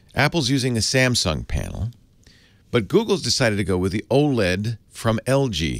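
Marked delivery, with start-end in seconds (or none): 3.9-5.8 very slow, drawn-out, deliberate phrasing. Naming which company makes which phone panel, spoken slowly. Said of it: "I say this slowly because it sounds like nonsense".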